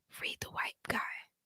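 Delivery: dropped to a very quiet, hushed, bare whisper. Naming a book title that can only be said quietly: whispered book title. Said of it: "I gotta whisper it".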